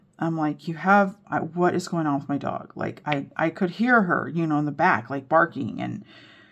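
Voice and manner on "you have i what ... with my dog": mock irritated tone. Retelling waiting at the vet for a dog: retelling own irritated words. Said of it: "I was getting so irritated".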